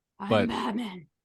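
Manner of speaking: low voice with a slight growl. Imitating how Batman says his line, growling a little: growly Michael Keaton Batman voice. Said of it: "he kinda growls a little bit".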